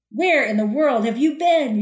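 put-on irritated, mildly angry, demanding voice. Retelling their manager's reaction after they left without telling anyone, mock-angry boss. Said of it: "he asked in a much angrier way".

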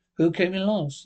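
ordinary delivery

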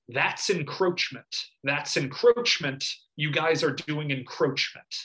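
ordinary delivery

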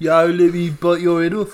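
put-on Brummie Birmingham accent. Speaker wonders how people in Birmingham talk, putting on a Brummie accent. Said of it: "Do they talk in a Brummie accent like".

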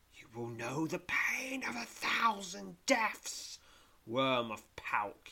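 hissed villain voice, swooping up high. Narrating a fantasy game, voice the villain's threat: Zarag's hissing voice. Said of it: "he hisses".

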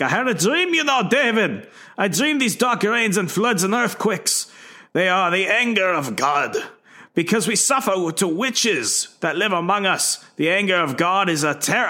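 clumsy put-on Scottish accent. Retelling a scene where an Inquisitor tells of his dream: attempted Scottish accent. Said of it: "Scottish, I'm sorry".

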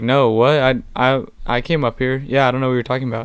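put-on confusion. Retelling how he reacted at first when confronted: feigning confusion. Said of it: "he was like acting like confused".

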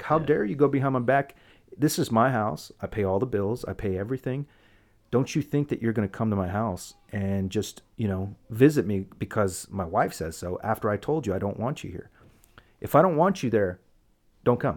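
usual speaking voice

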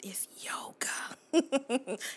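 playful, joking, hushed whisper. Saying a word jokingly treated as forbidden: playful whisper. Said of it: "I have to whisper it".

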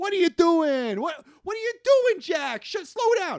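very high-pitched, shrill, very loud shouting. Retelling a movie scene where a father yells at his son: imitating John McClane yelling.

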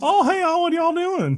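very high, thick, heavy Southern drawl. Two speakers joke about a ghost from louisiana, voicing her greeting; heavy southern accent. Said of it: "a heavy Southern accent".

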